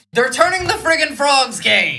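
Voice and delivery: animated put-on voice with pitch swooping all over. Reading chat on a stream, doing an Alex Jones voice. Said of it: "Alex Jones' voice".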